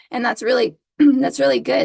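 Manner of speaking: voice going out. Talking about how teams communicate, voice going out. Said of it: "my voice is going out on a podcast".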